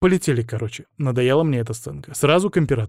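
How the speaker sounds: plain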